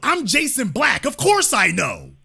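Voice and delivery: shouting. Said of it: "why is he yelling?".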